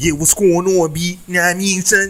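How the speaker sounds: put-on loud, up-north street-style accent. Mimicking how people up north talk: imitating up-north speech. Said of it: "you up north talking about some".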